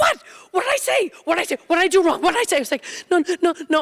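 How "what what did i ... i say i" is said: very high, fast, alarmed, bewildered delivery. Retelling how he reacted when she started sobbing, imitating his alarmed confusion. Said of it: "He's like".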